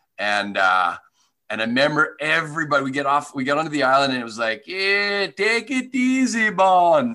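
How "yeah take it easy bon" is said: bad put-on Jamaican accent, much higher, slower. Recalling a cruise stop in Jamaica, the speaker quotes everyone in a terrible Jamaican accent. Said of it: "Terrible accent".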